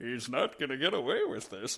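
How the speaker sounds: hammed-up cartoon villain voice, pitch swooping all over. Quoting lines from the game with another player: Eggman voice. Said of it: "we're just doing all the Eggman quotes".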